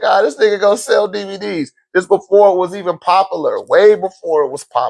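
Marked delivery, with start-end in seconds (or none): 0.0-1.7 high, scoffing, dismissive, mocking jeer. Retelling how people reacted back then: imitating people laughing at him. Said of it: "People was laughing at me like".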